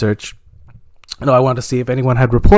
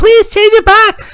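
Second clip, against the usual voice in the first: put-on very high, loud, whiny, pleading child voice.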